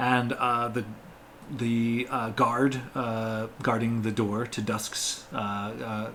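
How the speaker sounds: ordinary talk, nothing marked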